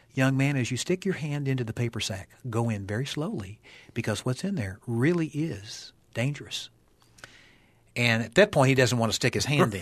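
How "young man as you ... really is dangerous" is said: soft half-whisper, very close as if at the ear. Retelling a warning to a boy about the sack: retelling a half-whisper. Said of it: "And I whisper in his ear".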